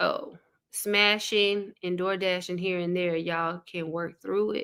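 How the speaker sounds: ordinary talk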